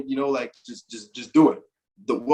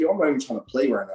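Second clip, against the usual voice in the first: put-on fed-up, mad, checked-out griping. Retelling a teammate refusing to play at a tournament: imitating a mad teammate. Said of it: "E-Man was mad about something".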